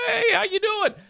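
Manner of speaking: friendly, very high, happy dog voice. Telling a story about a dog coming up to be pet, imitating a happy dog talking. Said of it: "He's going".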